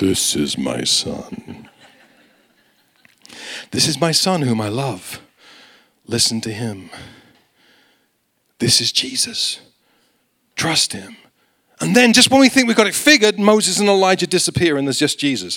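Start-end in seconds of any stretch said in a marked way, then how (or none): 0.0-11.2 deep, slow voice an octave lower, rising. Quoting God's words from verse seven: lower-octave voice of God. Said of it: "God always has a lower octave when I speak".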